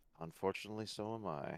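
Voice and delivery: soft muttering under the breath. A game master voices the Captain answering a player, muttered under breath. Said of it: "Captain's gonna say under his breath".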